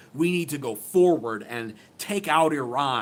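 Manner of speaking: ordinary delivery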